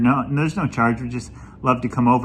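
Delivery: ordinary talk, nothing marked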